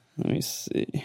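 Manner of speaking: soft, unvoiced muttering whisper.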